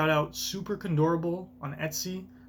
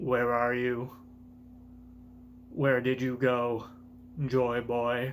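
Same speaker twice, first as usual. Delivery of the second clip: slightly robotic voice, low and flat; 4 semitones lower than usual. Reading out a message in a straight, linear font: slightly robotic voice. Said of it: "I'm giving him a little bit of a robotic voice".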